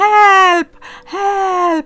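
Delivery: very high, very loud, drawn-out shouting cries. Reading a story, the narrator voices a character crying out: very loud shouting. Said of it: "then very loudly".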